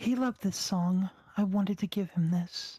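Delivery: mumbled, muttering to itself. The knocked-out pumpkin turns into the Lady Librarian, who mutters her words. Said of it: "it mutters".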